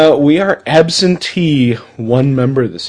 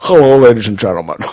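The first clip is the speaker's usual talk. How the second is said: lower put-on Scottish-accented voice; 4 semitones lower than usual. Greeting the audience as Sean Connery: Sean Connery voice. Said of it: "This is Sean Connery".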